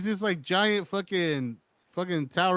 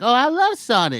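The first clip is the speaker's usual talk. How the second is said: put-on loud, slow, belting little kid voice; 7 semitones higher, 8 dB louder than usual. Imagining how Jason would sound if he ever talked; Jason in a little kid voice. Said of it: "what's a little kid voice?".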